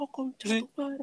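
play-acted very high, shrill small-child yelling. Retelling a video, the speaker imitates a kid shouting at another on a corner. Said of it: "un niño que sale y le grita".

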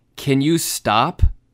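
loud, angry, fed-up, pissed-off woman's voice. Retelling how a woman snapped at someone behind her: imitating an angry woman. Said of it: "Karen gets fucking pissed and turns around and goes".

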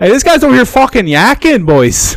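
put-on Argentinian accent blended with Chicago accent. Retelling what Tomas said to the boys, imitating Tomas's Argentinian-Chicago accent. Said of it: "with his weird combination accent of Argentinian and Chicagoan".

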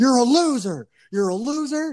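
very high, drawn-out, mock coach-style yelling. Retelling a TV episode where a character yells at a crying girl: imitating someone yelling. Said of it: "yelling at her".

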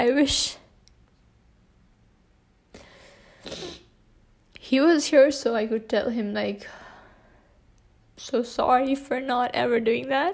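tearful, weeping, crying through words. Speaking to listeners about a loved one who is gone; crying while talking. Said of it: "I finally cried".

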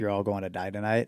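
usual speaking voice

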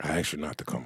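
hushed whisper. Telling someone off, the speaker reminds him of an earlier request, whispering. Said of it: "Why are you whispering?".

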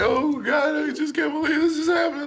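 very high, sobbing, tearful crying voice. Retelling how someone in the car reacted, imitating someone crying. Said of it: "this bitch in the car crying".

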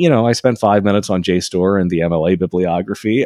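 ordinary talk, nothing marked

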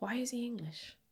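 softly whispered. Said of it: "the one thing I was like".

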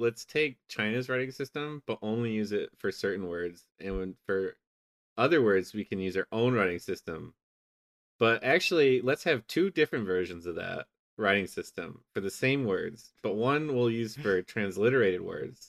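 ordinary talk

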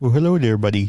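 Minnesotan-accented speech. Greeting a buddy after talk of lake fishing: Minnesotan accent. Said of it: "You got just as much of a Minnesotan accent as I do".

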